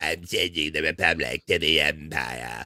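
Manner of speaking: low, hushed put-on character voice.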